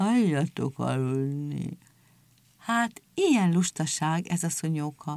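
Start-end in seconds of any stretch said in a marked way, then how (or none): 0.0-1.8 low, drowsy, barely awake, sleepy mumble. Greeted by shouting seals, the sleepy one yawns and answers in a sleepy mumble. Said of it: "álmos hangon azt motyogta".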